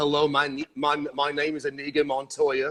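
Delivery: calm, even, put-on British accent. Describing a TV character's stare, the speaker quotes a famous line in a British accent. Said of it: "imagine this with a British accent".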